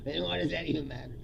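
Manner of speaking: ordinary talk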